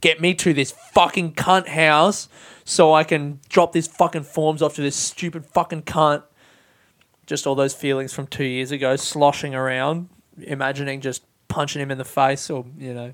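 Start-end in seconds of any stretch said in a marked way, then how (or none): 0.0-6.2 put-on furious, fuming muttering. Retelling driving with forms on the passenger seat: reenacting own fuming words. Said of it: "I'm just fuming".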